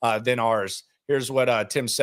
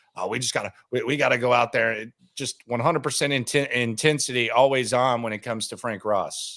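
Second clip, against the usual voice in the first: ordinary delivery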